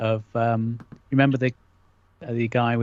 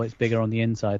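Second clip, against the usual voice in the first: ordinary talk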